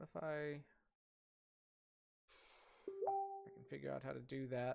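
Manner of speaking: very quiet mumble to oneself. Trying to fix a stream setup, talking to oneself: mumbling to oneself. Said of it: "I'm mumbling to myself".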